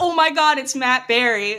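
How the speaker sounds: sudden, yelled-out outburst. Retelling yelling out in the theater at a post-credits scene: imitating own past yell. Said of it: "I literally yelled out".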